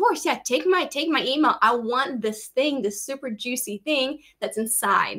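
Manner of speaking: ordinary delivery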